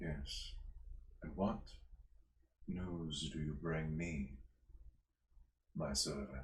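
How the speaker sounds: deep-voiced, lordly villain voice. Voicing an unseen figure on a throne greeting a crow: deep voice. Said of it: "A deep voice speaks to it".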